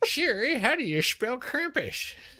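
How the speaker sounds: very high, slow, put-on old man voice. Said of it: "I love the old man voice".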